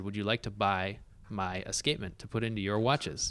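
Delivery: ordinary talk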